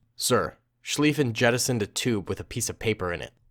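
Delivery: plain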